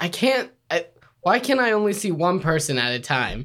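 ordinary delivery

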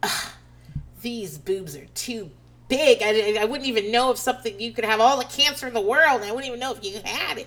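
put-on openly repulsed, rude, disgusted tone. Speaker recounts the rude woman giving her breast exam: imitating disgust. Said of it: "with disgust".

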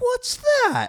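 put-on heavy, thick British accent, pitched very high. Retelling what a man on a date asked, in a super thick british accent. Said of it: "with this like super thick British accent".

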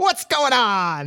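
loud, high-pitched pterodactyl cry voice. Describing a comic panel where a pterodactyl greets the group: loud high-pitched pterodactyl voice. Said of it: "That's probably how a pterodactyl sounds".

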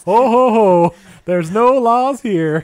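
very high, very loud, slow, shrill, drawn-out jolly holler. Joking that the North Pole has no laws: Santa Claus voice. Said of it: "Is that Santa Claus at the North Pole?".

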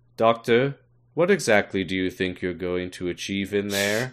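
bored, utterly uninterested, flat level monotone drone. Quoting Angel Bob over the radio, addressing the Doctor: imitating Angel Bob's bored voice. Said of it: "has the most bored voice".

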